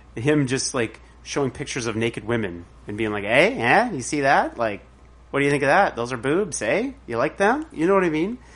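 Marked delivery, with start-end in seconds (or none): 3.3-7.7 small, jokey put-on comic character voice. Picturing a conversion therapist showing pictures: Norm Macdonald voice. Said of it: "In his little Norm Macdonald voice?".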